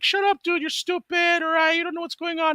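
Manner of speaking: voice pushed very high, squeaky. Recalling teasing him about his pants, quoting his reply: imitating Renee's high-pitched voice. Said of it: "He had a really high pitched voice like that".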